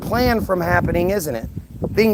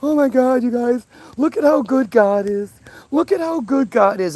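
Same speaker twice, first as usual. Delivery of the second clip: mock tearful, high, sobbing, weeping speech; 5 semitones higher than usual. Retelling a video of a father at a crash scene: imitating someone crying. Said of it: "he's all crying".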